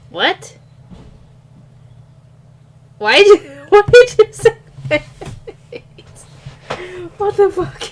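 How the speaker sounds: high, giggly talk broken by laughter. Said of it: "I'm just in a laughing mood".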